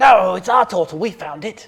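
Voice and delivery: defiant kobold voice. Voicing the kobold leader answering a player who claims the turtle: kobold leader voice. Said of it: "says the leader".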